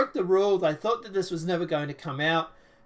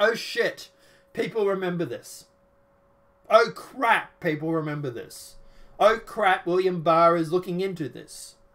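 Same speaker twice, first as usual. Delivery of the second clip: ordinary talk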